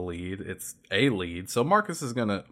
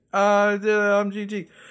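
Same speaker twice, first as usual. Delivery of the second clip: mock, very high, slow, dragging drunk voice; 12 semitones higher, 7 dB louder than usual. Retelling a man's boast in a bar: imitating a drunk man. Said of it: "he's drunk and he's like".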